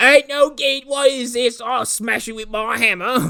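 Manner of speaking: put-on very high-pitched Cockney accent. Speaker voices an imagined person's reaction to a machine: cockney accent. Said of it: "Cockney accent in the middle of Geneva".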